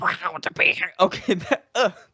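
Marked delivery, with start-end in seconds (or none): 0.0-0.9 sloppy, bad quacking cartoon duck voice. Imagining a new president's inauguration speech, done in a Donald Duck accent. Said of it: "he speaks in a Donald Duck accent".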